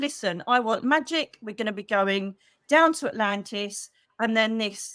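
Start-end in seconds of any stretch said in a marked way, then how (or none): none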